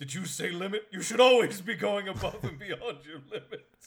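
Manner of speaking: booming, very loud, high put-on anime character voice. Acting out a police officer who turns into an anime character: anime character voice. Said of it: "transform into the anime character who'd be like".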